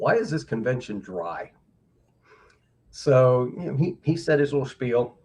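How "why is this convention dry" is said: put-on deadpan delivery. Retelling the first thing a man said at the convention, deadpan. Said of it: "just deadpan".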